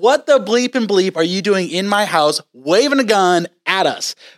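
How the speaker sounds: mild yell, lightly sketched. Retelling how a sleeping seller burst out at them: imitating someone screaming. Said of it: "starts screaming at the top of the lungs".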